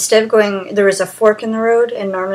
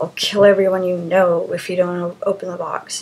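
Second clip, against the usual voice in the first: ordinary talk, nothing marked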